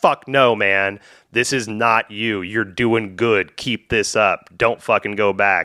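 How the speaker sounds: mock loud angry voice. Retelling what an inner voice said: imitating a loud angry voice. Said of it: "quiet voice that got really loud and angry".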